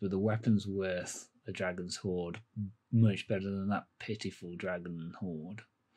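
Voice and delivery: very quiet, low mutter under the breath. Game master voicing a character, muttering under his breath. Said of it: "under his breath. He says".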